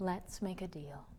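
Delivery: soft, kindly, very quiet half-whisper. A woman leaning down to a tiny rat, speaking in a soft kindly half-whisper. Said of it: "smiles kindly and in a very soft voice, whispering almost".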